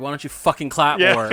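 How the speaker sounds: put-on muttering under the breath. Retelling remarks to a noisy moviegoer: imitating muttering under breath. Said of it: "I'm saying little things under my breath".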